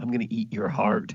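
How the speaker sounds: theatrical loud whisper. He leans down to Seth's ear and speaks, half-whispering into someone's ear. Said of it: "leans down and he whispers into Seth's ear".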